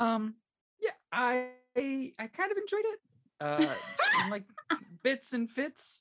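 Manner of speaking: voice going up high. A speaker answers the group while a listener notices the pitch: high-pitched voice. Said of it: "how high your voice went".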